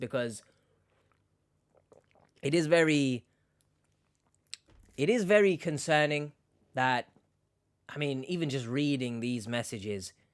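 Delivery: pushing through, fighting back tears, nearly choking up. Reacting after reading troubling chat messages aloud, holding back tears. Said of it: "not get choked up".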